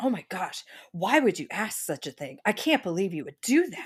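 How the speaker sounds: distressed, super upset exclaiming tone. Retelling a clash between a receptionist and a caller, imitating someone upset. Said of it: "the lady on the phone was also very upset".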